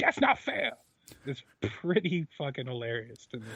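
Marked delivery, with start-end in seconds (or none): 0.0-0.7 play-acted bellowing at the top of the lungs. Retelling how Taz yells at the top of his lungs: Taz impression, yelling. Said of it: "Taz at the top of his lungs going".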